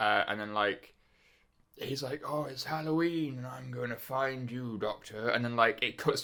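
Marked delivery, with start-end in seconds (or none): 2.3-5.3 weird, soft, hushed, half-whispery stage whisper. Imitating a noseless alien from the show: weird half-whispery Voldemort-like voice. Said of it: "you know how Voldemort kinda has a weird whispery voice?".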